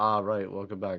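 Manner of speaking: mock disappointed tone, put on for effect. Complaining the others seem unhappy at the return: imitating someone sounding disappointed. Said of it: "And then you're like".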